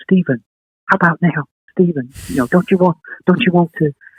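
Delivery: high, coaxing, urging half-whisper. Recalling a man half-whispering his name during a gathering, retelling a friend's half-whisper. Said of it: "he's trying to whisper".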